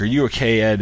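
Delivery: ordinary talk, nothing marked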